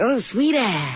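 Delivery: cocky, swaggering tough-guy voice. Retelling how someone greeted the speaker: imitating someone talking like a big man. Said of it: "he was talking like a big man".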